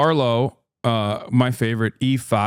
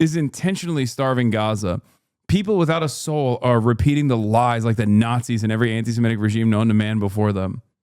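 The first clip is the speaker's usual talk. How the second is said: plain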